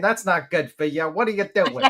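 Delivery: put-on high, scolding grandparent voice. Pretending to be a grandparent scolding someone about smoking: put-on guilt-tripping grandparent. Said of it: "I feel like the grandparent right now, just guilting you".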